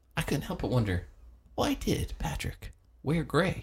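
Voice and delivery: announcer reading rhythm. Mocking how people at NPR all talk the same: NPR host cadence. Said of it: "at N P R, they all talk the same".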